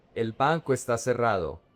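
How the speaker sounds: normal talking voice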